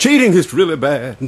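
high, preachy, sermonizing pastor voice. Answering a question about cheating, saying it like a pastor. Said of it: "let me do it like the pastor".

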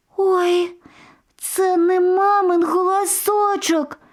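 very high, scared, tiny squeal. Narrator reads the youngest goat kid answering a voice at the door, frightened squeak. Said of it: "перелякано запищало найменшеньке".

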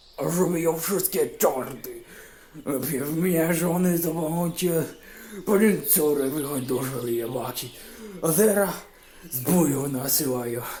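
put-on loud, high, slurred drunken babble with hiccups. A drunk peasant keeps grumbling to himself over his flask, drunken babbling with hiccups. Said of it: "Bełkotał chłop, czkając pomiędzy zdaniami".

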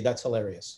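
put-on flat delivery. Recalling how she reacted to the speaker's joke, imitating total deadpan. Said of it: "with a total deadpan face".

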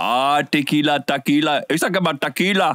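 put-on accent from India.

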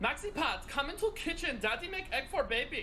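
put-on Austrian accent, pitched a bit up. Performing her impersonation of an Austrian father making breakfast for his son. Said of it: "my impersonation of an Austrian father".

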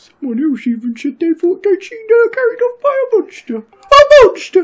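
high-pitched, stretched dramatic voice.

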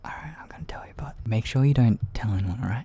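soothing, gentle tone. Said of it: "Your voice is kinda soothing".

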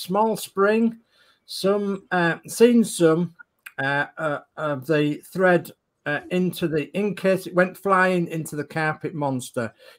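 ordinary delivery

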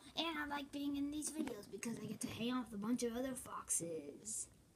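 soft, unvoiced whisper. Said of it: "I talk like this".

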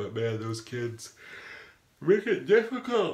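words pulled out by yawning. Vlogger talking about getting back into vlogging, talking through a yawn. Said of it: "I am just yawning".

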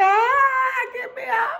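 mock very high, frightened plea, drawn-out ah. Retelling how a scared ten-year-old cried out, imitating a scared scream. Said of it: "He was so scared".

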